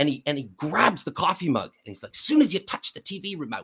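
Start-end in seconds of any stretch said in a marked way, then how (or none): 2.1-3.6 put-on Australian accent, much higher. Retelling what a man said as he grabbed a coffee mug, imitating an Australian accent. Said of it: "in his Australian accent".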